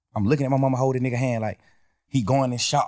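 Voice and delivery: ordinary talk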